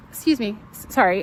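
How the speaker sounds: ordinary talk, nothing marked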